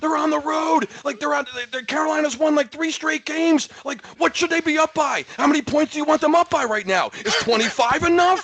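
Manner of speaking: acted-out angry, high, barking rant. Retelling a rant about a team called sputtering: retelling barking angrily. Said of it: "And we were just barking".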